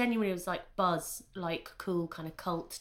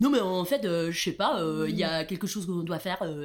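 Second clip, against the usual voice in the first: put-on sultry, sexy French accent, raised voice, "euh" fillers; 6 dB louder than usual. Imitating a half-French bar owner when asked for an impression: imitating Claire speaking sexy French. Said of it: "really quite sexy".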